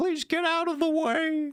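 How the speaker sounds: very high, griping, complaining voice. You recall a famous quip by a woman who complained in her videos, imitating a complaining woman. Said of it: "And she sounded kind of like that".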